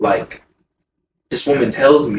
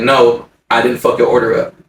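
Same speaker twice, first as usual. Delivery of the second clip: plain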